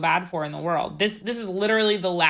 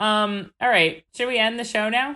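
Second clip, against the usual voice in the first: ordinary delivery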